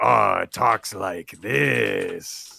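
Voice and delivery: slow, loud, rough greasy alien drawl, "this" drawn out. Imagining how the alien informant character talks: Aura voice, greasy alien. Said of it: "I kind of imagine he's like".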